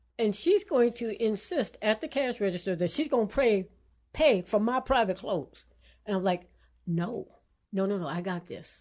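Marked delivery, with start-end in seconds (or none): 6.9-8.9 drawn-out half-whispered tones. Retelling refusing a friend at the register: imitating own half-whisper. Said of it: "in whisper tones".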